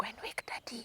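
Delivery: whispered under the breath, very quiet. Speaker retells what she said to her brother: retelling a whisper. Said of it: "I'm whispering".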